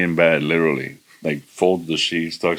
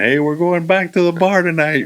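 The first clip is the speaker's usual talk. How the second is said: very high, shrill laughing scream; 12 semitones higher, 4 dB louder than usual. Retelling what he yelled from the end of the bench: imitating someone screaming. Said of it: "and he's screaming".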